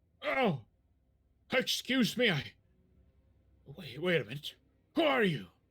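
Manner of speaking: put-on elderly man's voice. Voicing an old man with a crooked back meeting strangers on stairs: old man voice. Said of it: "an old man walking up the staircase".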